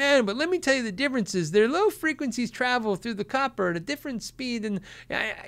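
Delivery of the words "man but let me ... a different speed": nerdy know-it-all techie voice, pitched up. Imagining viewers explaining cable differences: imitating a techie nerd. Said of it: "some of you really techie nerds are gonna be like".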